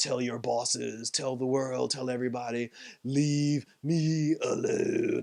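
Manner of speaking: low, slow, quiet, menacing monster growl.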